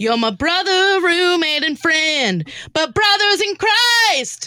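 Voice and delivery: very high, shrieking, rising, put-on scream. Acting out a line for the others: put-on screaming. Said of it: "Like, screaming it".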